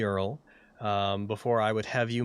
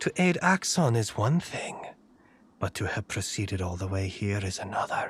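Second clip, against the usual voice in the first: echoing, reverberating voice, lower pitch; 4 semitones lower than usual. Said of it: "a voice echoes out from the chamber".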